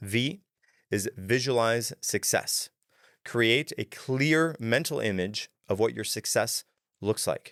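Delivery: slow, deliberate, unhurried read-through.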